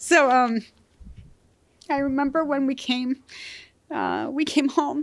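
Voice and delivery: fighting back tears. Recalling coming home with dad, trying not to cry; choking up. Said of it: "and excuse me".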